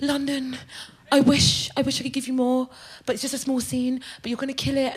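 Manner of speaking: polite, middle-class female voice.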